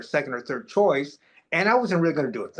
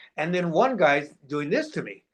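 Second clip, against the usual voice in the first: ordinary talk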